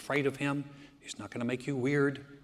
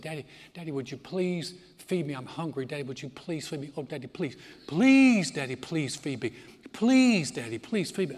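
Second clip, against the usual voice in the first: put-on pleading child voice, louder; 5 dB louder than usual. Acting out a little child asking daddy for food: begging child. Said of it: "I like for them to beg".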